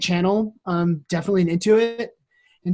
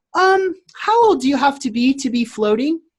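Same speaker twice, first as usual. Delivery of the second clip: put-on high, cute little girl voice; 7 semitones higher, 3 dB louder than usual. Float center owner retelling a little girl's phone call, in a cute little girl voice. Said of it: "this cute little voice".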